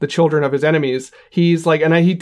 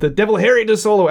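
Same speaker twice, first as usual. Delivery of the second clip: put-on Yorkshire accent, higher pitch; 6 semitones higher than usual. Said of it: "in his Yorkshire accent or whatever".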